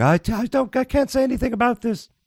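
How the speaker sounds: high, mock posh royal voice. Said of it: "heard the Queen saying".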